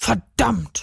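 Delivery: furious, angry outburst. Narrator reads the robbed man after the thief has vanished: angry cursing. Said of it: "schimpfte der Beklaute".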